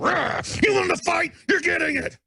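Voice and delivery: high, shouted, roaring, taunting battle cry.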